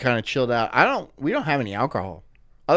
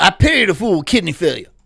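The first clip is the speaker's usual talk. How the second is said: loud, high, belted character voice; 5 semitones higher, 5 dB louder than usual. Joking about a made-up doctor wearing a gold necklace: Doctor T voice. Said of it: "He's like".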